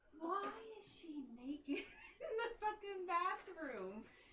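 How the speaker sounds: innocent, guileless, high and slow. Retelling what the brother said on finding her: imitating an innocent tone. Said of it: "he says it in the most innocent way too".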